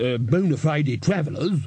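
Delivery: ordinary delivery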